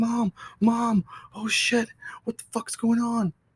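put-on very high, drawn-out, frightened yell. Telling a ghost story, acting out their past self calling for mom, retelling yelling for mom. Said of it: "I was yelling for my mom".

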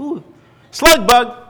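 excited, high, loud, gleeful shout.

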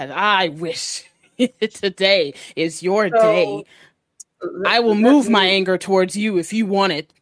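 very loud, booming, slow growled orc voice. An orc who has been listening interrupts and confronts the group; orc growling. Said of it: "and [name] is about to say something when she gets interrupted by the orc that's been listening back and forth and just / [name] and Cully a look as she huffs out of the door. / kind of growls".

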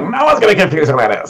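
over-the-top high goblin voice. Showing how an extreme voice makes a character easy: Slugs goblin voice. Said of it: "if you go to some extreme".

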